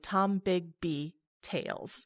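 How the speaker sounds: slow, careful delivery. Naming a guest's podcast on air: saying it slowly. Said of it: "I have to say it slowly".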